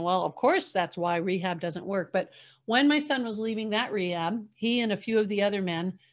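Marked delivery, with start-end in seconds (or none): none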